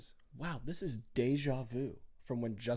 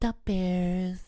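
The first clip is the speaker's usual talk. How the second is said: booming, very loud, high-pitched natural voice; 7 semitones higher, 10 dB louder than usual. Retelling the end of an interview: imitating the player's voice. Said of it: "He sounds just like that".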